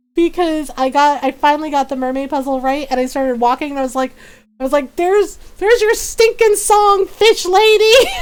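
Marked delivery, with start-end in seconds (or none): 5.0-8.1 shrill, very high, loud, exasperated, angry yell. Retelling finally solving a puzzle and yelling at the mermaid: imitating own angry yell. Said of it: "I just kinda yelled, yelled at the mermaid".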